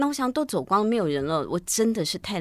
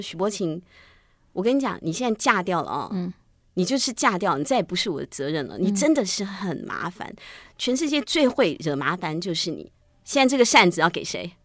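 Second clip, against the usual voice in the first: ordinary delivery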